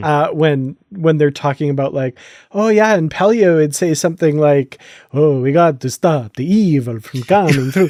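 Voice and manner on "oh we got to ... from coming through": voice done like a vampire. Quoting the kind of thing Pelia would say: Pelia in a vampire voice. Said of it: "Pelia would say that like a vampire".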